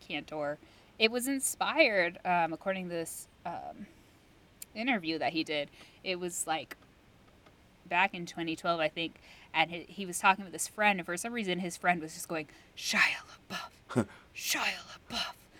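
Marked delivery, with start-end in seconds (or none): 12.8-15.3 spooky, eerie, breathy creepy whisper. Retelling how a friend kept saying a name: imitating a creepy whisper. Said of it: "in this really, like, creepy whispering thing".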